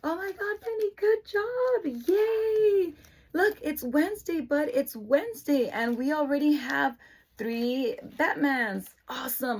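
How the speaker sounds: peppy, high-pitched voice. Showing how the speaker talks to the children, high-pitched peppy voice. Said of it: "I'm very high-pitched".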